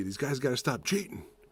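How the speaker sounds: imitated grumbling voice breaking into screaming. Retelling how a buddy reacts to flags on TV: imitating Nick screaming. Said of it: "he starts screaming at the T V".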